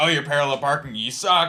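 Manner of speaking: loud, sarcastic, facetious mocking tone. Imagining a joke couple teasing each other: acting out sarcastic mockery. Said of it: "sarcastically, facetiously, like, make fun of something".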